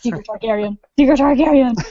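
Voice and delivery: private self-talk, said twice over. Acting out watching each episode: imitating muttering under breath. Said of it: "I just mutter under my breath".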